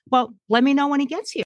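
sarcastic banter, pitched very high. Recount your usual reply when he said he was waiting for death, retelling sarcastic banter. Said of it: "I was always sarcastic with him".

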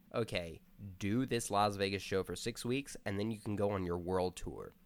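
normal talking voice

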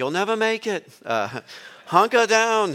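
put-on high Aussie accent. Quoting the man they rented a boat from, in an Australian accent. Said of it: "That's my best Australian accent".

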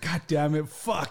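mock-angry outburst, acting pissed off. Retelling how an embarrassed guy on crutches reacted, mock-angry outburst. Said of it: "He's like all pissed off".

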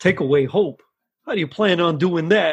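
put-on Bronx accent in a bartender-style voice. Acting out the bartender's reply from a scene the speaker picked: Bronx bartender accent. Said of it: "Bronx type bartending accent you just did".

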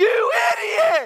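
put-on very high, loud, tiny toddler yell. Retelling a three-year-old yelling from the back seat: imitating Josiah yelling. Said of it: "this little three-year-old voice behind me yells out".

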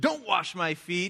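top-of-the-lungs, loud, high, drawn-out shout. Retelling an Easter play actor's line: imitating Mel Bates shouting at full volume. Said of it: "he shouts at the top of his lungs".

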